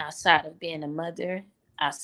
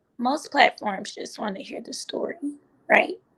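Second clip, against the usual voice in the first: high, tearful, choked-up voice catching, close to tears; 5 semitones higher than usual. Guest speaking about the host's platform keeps talking while choking up, about to cry. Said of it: "I'm about to cry".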